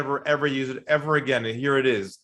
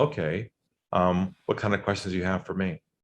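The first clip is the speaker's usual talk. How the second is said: lowered, softened, low-pitched voice; 6 semitones lower than usual. Retelling a phone call where the other man finally asks his questions, in a lowered voice. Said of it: "he lowers his voice and he says".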